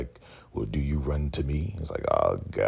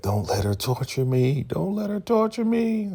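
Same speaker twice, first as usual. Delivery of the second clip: very high-pitched mock tearful crying voice. Retelling a TV scene where a tied-up character begs: imitating someone crying. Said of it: "she's crying like".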